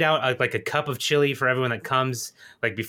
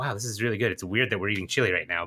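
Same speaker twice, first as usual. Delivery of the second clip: put-on whisper, lower; 4 semitones lower, 3 dB quieter than usual. Imagining funeral guests eating chili, imitating guests whispering.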